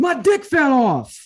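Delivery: very high-pitched, very loud, shrill, drawn-out holler. Retelling a Vine where a girl plays a guy, imitating a yell. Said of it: "I just wanted to yell that".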